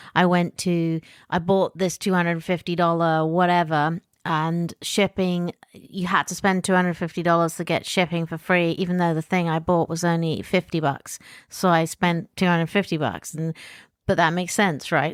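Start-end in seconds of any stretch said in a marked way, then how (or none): none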